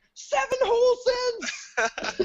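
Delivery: high, slow, thrilled cheer. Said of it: "I'm like".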